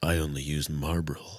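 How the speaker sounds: deep, sexy, advert-style voice. Joking that a sick voice could pass: deep sexy Marlboro man voice. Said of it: "deep, sexy voice".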